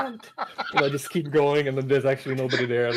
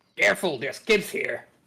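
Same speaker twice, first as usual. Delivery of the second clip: put-on, rasping, roughened, raspy voice; 2 semitones higher than usual. A player answers back in character during a game, in a raspy voice. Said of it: "try to make my voice raspy like like his".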